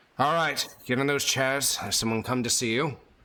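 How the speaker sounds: rough, gruff knight voice. Narrator voices the knight who has just entered with a torch, gruff knight voice. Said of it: "you hear the sort of gruff voice of the night".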